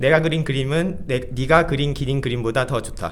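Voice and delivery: very fast Korean, rattled off in one breath. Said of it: "I give you one sentence".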